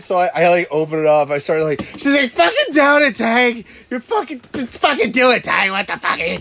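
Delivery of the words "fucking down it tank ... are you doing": high-pitched, shrill screeching yell, swooping up and down. Retelling how Tracy's sister pushed drinking on the speaker: imitating Donna yelling. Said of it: "They're yelling at you".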